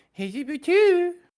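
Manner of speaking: very high, loud, phlegmy character voice. Imitating the voice used all through the new movie: Billy Madison voice. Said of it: "the Billy Madison when he's like".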